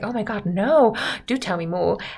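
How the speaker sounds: mock enthralled, eager, gushing excitement. Retelling a novel's plot, Catherine begging for more of the story: imitating Catherine getting excited. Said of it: "Catherine gets really into it".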